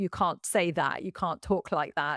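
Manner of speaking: ordinary talk, nothing marked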